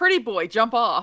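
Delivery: mild, half-hearted yell, called out. Calling out in a role-play scene before casting a fire wall: yelling. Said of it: "I'm gonna yell".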